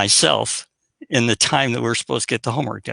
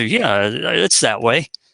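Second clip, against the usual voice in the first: slow, slightly hesitant, unsure, half-committed voice. Showing the difference between certainty and doubt: slight hesitation. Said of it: "you could hear in my voice right there, a little hesitation".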